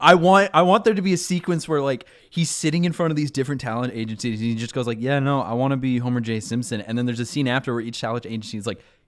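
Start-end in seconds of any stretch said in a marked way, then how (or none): 5.0-6.8 put-on cool, unfazed, calm matter-of-fact delivery. Imagining him telling talent agencies his dream role, acting calm and matter-of-fact. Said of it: "He's so calm about his dream".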